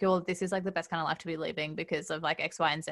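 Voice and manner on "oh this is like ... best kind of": ordinary delivery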